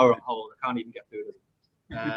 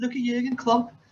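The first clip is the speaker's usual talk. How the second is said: high-pitched put-on impression in a thick Scouse accent. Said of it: "I've just given a Scouse accent".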